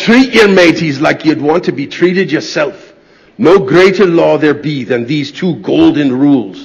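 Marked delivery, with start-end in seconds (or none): none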